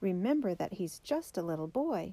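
ordinary delivery

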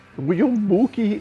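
put-on high-pitched nasal voice. Describing an actress's voice, imitating Rosie Perez's voice. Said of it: "that voice is like".

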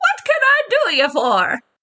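put-on very high, sing-song, swooping old gnome woman voice. Narrator voices an old gnomish woman popping up at a counter, old gnome woman voice. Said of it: "an old gnomish woman just suddenly pops up".

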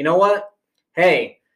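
put-on stern voice. Retelling his dad's last warning to the driver: imitating a stern order. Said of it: "as stern as he could possibly be".

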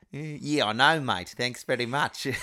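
put-on Australian accent. Answering a remark that their English is good tonight, in a put-on Australian accent. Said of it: "What accent was that?".

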